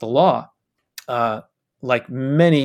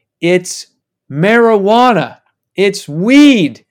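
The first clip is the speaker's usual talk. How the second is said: very loud shout with the word "weed" stretched long; 6 semitones higher, 8 dB louder than usual. Telling a story about a friend's dad who suddenly started shouting: retelling a shout. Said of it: "his dad started shouting".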